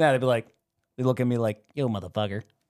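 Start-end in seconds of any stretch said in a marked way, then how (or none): 1.7-2.4 rude put-on chicken voice, pitched lower. Answering what a rude talking chicken would sound like: rude talking chicken voice. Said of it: "Is that how they would sound?".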